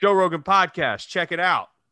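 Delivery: high, hyped, mock announcer-style intro yell. Describing a man at the airport yelling along with the podcast, yelling the JRE intro. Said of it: "the JRE begins with the title sequence yells".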